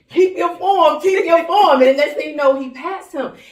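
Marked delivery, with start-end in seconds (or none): 0.2-1.8 high-pitched, loud, encouraging yell. Retelling calling out to the runner during the race, imitating yelling. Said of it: "I started yelling".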